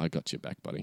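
soft, quiet conspiratorial whisper.

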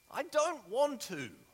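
put-on very high, whiny small child voice. Describing a childlike reaction to being told to serve others, mock whiny child voice. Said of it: "not in that whiny voice".

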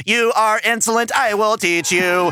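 machine-like robot voice. Viewer quotes a villain yelling while Spider-Woman lures him, imitating a robot voice. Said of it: "he definitely talks like a robot".

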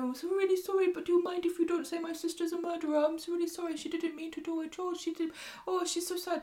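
high-pitched, overly apologetic, terribly sorry voice. Imitating Leanne being overly apologetic about her sister. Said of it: "if Leanne was walking around going".

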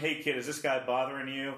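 ordinary talk, nothing marked

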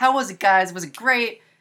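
super excited, eager, high and loud. Retelling a character asking friends about his commercial: imitating someone super jazzed. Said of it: "super jazzed about it".

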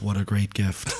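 low, dead-level, unvaried monotone. Host responding to a gift from the other host's girlfriend, monotone. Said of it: "I like the monotone".

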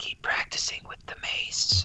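quiet, hushed whisper, close to the ear. Playing a character leaning over to another before he peels off, whispering. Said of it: "lean over and just whisper".

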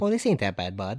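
Minnesota-sounding speech. Speaker imitates how Minnesotans react to the cold: Minnesota accent. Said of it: "speaking of that accent".

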